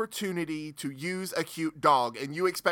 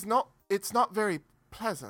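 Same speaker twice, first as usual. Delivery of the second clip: slight hint of British accent, much higher pitch; 4 semitones higher than usual. Chatting with co-hosts, the speaker slips into a slightly British accent. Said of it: "He got a little British there for a second".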